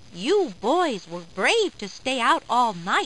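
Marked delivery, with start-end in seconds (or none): none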